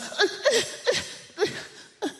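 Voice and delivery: high, drawn-out, halting, flustered stammer. Retelling a confrontation on a train, the speaker acts out a woman's flustered stammer. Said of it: "And she gets flustered".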